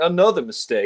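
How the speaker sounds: play-acted light, easygoing, jovial tone. Imitating an actor's line from a film scene: imitating Lazenby's jovial tone. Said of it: "he just says it sort of in a jovial tone".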